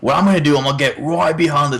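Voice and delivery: put-on Australian accent, TV presenter voice. Asked to do an Australian accent, one speaker tries a Steve Irwin impression. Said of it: "you can't do any Steve Irwin".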